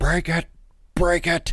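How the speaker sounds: very high, rattly, choppy screaming. Act out a loud man whose voice was choppy and rattly, imitating a man screaming. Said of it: "He just starts screaming".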